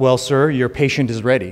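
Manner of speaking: plain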